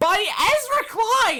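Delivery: high, climbing, fed-up, exasperated sarcastic yell. Announcing where a linked article leads and who wrote it: yelling. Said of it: "Sorry for yelling".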